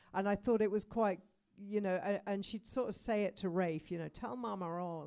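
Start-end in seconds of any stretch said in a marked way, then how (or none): 4.0-5.0 put-on creepy American accent, slower. Explaining a book title's origin, quoting a woman's line in a creepy American accent. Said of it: "in this like really creepy American accent".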